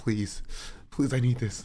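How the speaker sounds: put-on desperate pleading and begging. Retelling how someone reacted after seeing his career flash by: imitating someone pleading. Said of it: "saw his entire career flash before his eyes".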